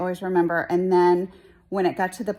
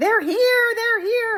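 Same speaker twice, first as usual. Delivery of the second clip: mock very high, thrilled, excited yelling; 4 dB louder than usual. Retelling seeing visitors pull up the driveway as a child: imitating excited yelling. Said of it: "just yelling".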